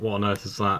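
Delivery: ordinary talk, nothing marked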